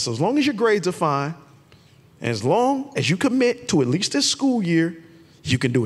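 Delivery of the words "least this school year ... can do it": ordinary talk, nothing marked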